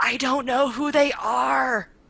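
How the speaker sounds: big, slow stage whisper, word are stretched out. Playing Rogue Dragon, answering a companion about strangers: loud side whisper. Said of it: "does this big side whisper".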